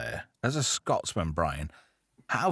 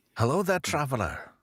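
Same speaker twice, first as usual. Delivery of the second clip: poor put-on Scottish accent; 4 semitones higher than usual. Greeting a traveller in character, the speaker uses a bad scottish accent. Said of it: "for my bad Scottish accent".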